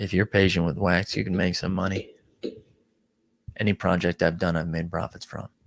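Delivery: low, quiet, earnest, solemn, serious voice. Reading out a comment aloud: serious voice. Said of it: "let's go back in a serious voice".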